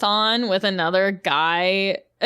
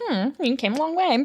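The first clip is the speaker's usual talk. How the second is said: attempted put-on British accent, pitched higher; 6 semitones higher than usual. Recapping a movie, the speaker quotes the mom in an attempted British accent. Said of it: "I can't do the British accent".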